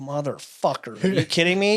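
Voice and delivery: exasperated, frustrated sudden outburst. Retelling dropping something from the lap: imitating own frustrated outburst. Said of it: "I get so frustrated".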